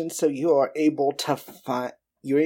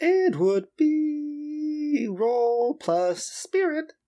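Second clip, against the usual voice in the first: goofy, silly put-on voice, very high and slow; 12 semitones higher than usual. A player stalls for time during a game, in a funny voice. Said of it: "I am going to say this in a funny voice".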